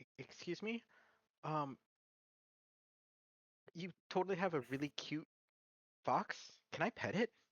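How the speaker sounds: tentative, faltering, hesitant, semi-cautious and polite. Voicing a character asking to pet a fox: semi-cautious, hesitant. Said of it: "approach semi-cautiously and be like".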